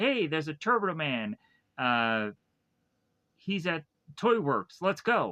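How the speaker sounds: ordinary talk, nothing marked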